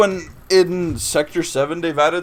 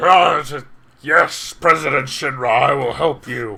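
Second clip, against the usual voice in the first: grunty, raspy big-guy voice; 2 semitones lower, 3 dB louder than usual. Retelling how a friend voiced General Heidinger: grunty raspy big-guy voice. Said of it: "more like grunty rasp".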